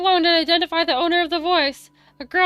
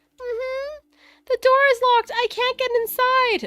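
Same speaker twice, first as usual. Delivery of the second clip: put-on small, high, childlike little girl voice; 7 semitones higher than usual. Voicing the girl Momo, locked out of her apartment, in a high-pitched Momo voice. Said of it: "I'll just do high pitched voice".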